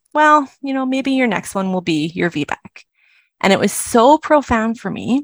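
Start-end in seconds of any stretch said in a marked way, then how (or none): 0.1-2.8 acted, extremely casual, offhand tone. Retelling what a nurse once said to her: imitating a very casual tone. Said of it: "she said in the most casual tone ever".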